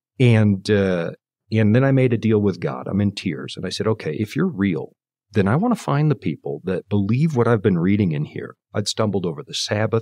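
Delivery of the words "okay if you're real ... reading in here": ordinary delivery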